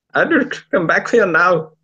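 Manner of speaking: loud, high, put-on Indian accent, calling out. Repeating a Fifth Doctor impression that drifted into an accent: put-on Indian accent. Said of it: "I just sort of started going Indian".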